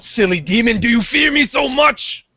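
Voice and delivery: high shouting in a put-on character voice. Voicing a character taunting a demon while running away: yelling in character. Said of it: "he yells out".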